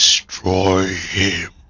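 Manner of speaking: deep, rumbling growl from low down. A game master speaks in a player's mind, rumbling and growling as Tiamat. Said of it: "the rumbling and the growling voice of Tiamat herself".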